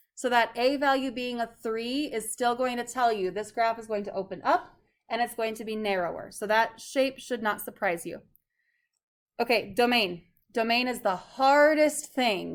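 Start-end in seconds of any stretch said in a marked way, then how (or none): 10.5-12.6 very heavy, put-on, laid-on-thick sarcasm. Telling a class how hard finding the domain is: incredibly sarcastic, put on. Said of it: "I'm being incredibly sarcastic when I say".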